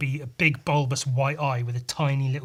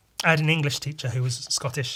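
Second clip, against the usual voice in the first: plain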